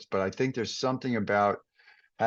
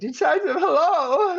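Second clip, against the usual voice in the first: very high, big, loud, booming voice; 8 dB louder than usual. Retelling going for it with a character from the past, in a big voice. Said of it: "in this kind of big voice".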